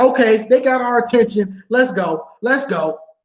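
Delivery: ordinary talk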